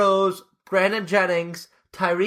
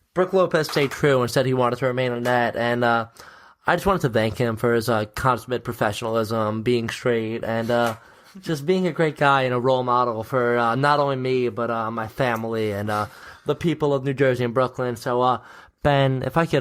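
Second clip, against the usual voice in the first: low, mock somber voice. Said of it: "I'm gonna get in my somber voice".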